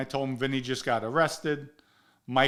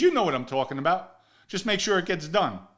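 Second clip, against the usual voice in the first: mock needling, heavy sarcasm, pitched up; 5 semitones higher than usual. Retelling what Michael said during an argument: imitating a sarcastic remark. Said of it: "he said it with sarcasm".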